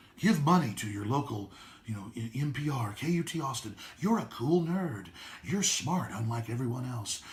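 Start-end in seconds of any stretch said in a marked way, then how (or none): 4.0-7.2 calming, soothing public-radio announcer voice. A speaker mocks self-styled cool nerds, mock-soothing public radio voice. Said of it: "Listen to my soothing voice".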